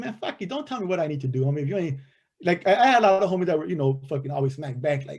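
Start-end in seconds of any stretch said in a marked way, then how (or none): 0.0-2.0 put-on cocky, rebellious, defiant youthful tone. Retelling own words as a youngster, imitating his defiant younger self. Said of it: "as a youngster, that was my attitude".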